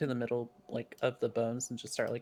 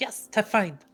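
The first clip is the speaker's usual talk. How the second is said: triumphant acted cry, victorious in tone; 9 semitones higher, 8 dB louder than usual. Playing a character holding up a found pouch: triumphant in-character cry.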